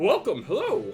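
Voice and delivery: voice of a rock creature. Voicing a rock person shopkeeper greeting a customer: rock person shopkeeper voice. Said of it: "And he go, and they go like".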